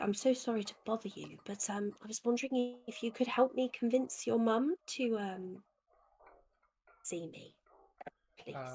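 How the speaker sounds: sweet, kindly voice. A player knocking on a door to ask for help, sweetest kindly voice. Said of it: "use my sweetest, kindly voice and say".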